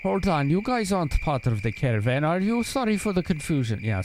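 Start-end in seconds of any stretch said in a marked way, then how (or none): 0.0-2.6 bad fake Russian accent, much higher pitch. Voicing a woman questioning the group about the caravan: bad russian accent. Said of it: "that's just a bad Russian accent".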